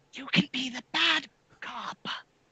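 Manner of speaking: whisper under breath. Suggesting a plan to another character, whisper under breath. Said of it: "kinda whisper under my breath".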